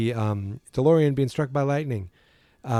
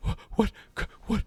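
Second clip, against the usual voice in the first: mock frightened, stumbling, stammering words, whispered and breathy; 9 semitones higher, 5 dB quieter than usual. Retelling a movie scene, acting out Doc: imitating Doc, scared and panicked. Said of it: "He gets all scared and panicked".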